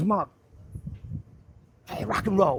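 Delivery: English speaker's faked American accent. Retelling what the manager said: imitating manager's American accent.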